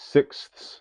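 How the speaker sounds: sixths said slowly, carefully and deliberately. Explaining fractions, saying the word he finds difficult: slow careful 'sixths'. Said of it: "I have to say it slowly so it doesn't sound weird".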